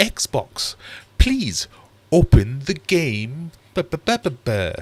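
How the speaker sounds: very high, slow, exaggerated posh voice. Recalling talking to a voice-activated Xbox: posh voice. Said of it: "I was always using my posh voice".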